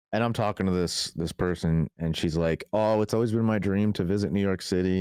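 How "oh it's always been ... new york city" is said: plain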